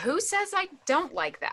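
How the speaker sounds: cross, bristling reply. In a drama scene, a reporter retorting to a remark, angry. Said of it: "you sound kind of angry".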